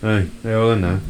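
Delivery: normal talking voice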